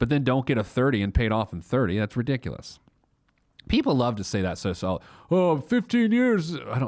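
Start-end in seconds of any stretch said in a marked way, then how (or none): 5.3-6.5 put-on high, sneering, mocking parody voice. Imitating what people love to say, in a mocking voice. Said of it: "Why do I use that voice?".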